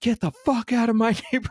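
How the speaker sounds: acted-out, very high-pitched screaming rant. Retelling confronting a man from the car: imitating screaming at someone. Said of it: "Just screaming at him".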